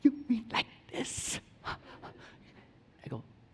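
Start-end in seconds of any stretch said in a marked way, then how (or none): 0.0-1.4 very quiet, barely audible whispering. A parent retells their son asking a question; quiet voice.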